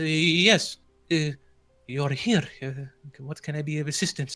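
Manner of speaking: fumbling, quavering voice. Narrator voicing Donovich as he opens his front door to visitors, bumbly, nervous voice. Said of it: "in his a bumbly, nervous, and shaky voice".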